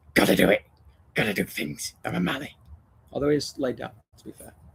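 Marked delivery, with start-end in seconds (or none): 0.1-2.5 low, put-on talking dog voice. Voicing a second dog, Kobe, who has just joined in, doing Kobe's voice. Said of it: "Kobe sounds like that as well".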